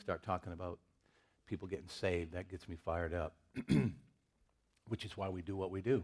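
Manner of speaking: soft voice, composing through strong held-back emotion. A pastor introducing his scripture reading, emotional, composing himself. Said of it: "I'm trying to compose myself".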